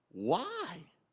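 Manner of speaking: high, hurt, bewildered cry.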